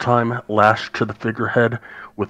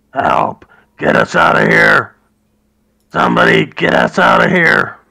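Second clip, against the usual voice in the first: very loud, ragged, rough yelling cries; 8 dB louder than usual. Narrating a game scene, the speaker voices prisoners behind cell doors: prisoners yelling for help. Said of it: "there's a bunch of yelling and banging".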